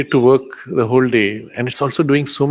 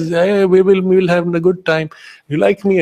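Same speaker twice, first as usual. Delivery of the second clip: high, fond, affectionate sweet-talking tone; 6 semitones higher than usual. Retelling a mobile phone advert, the woman on the phone: imitating affectionate talk. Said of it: "she starts talking in a very affectionate way".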